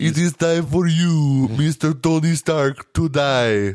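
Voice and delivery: clumsy bad Russian accent, slow and high. Quoting a movie villain threatening Tony Stark: attempted Russian accent.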